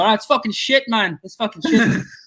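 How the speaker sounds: put-on Irish voice. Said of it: "if you're in the crowd from Ireland, they go".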